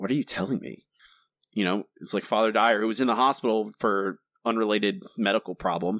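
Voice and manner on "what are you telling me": mock whisper, quieter. Retelling a movie scene where a character answers the phone, retelling a whisper. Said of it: "When he's whispering".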